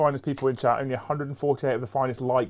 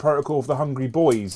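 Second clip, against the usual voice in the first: ordinary talk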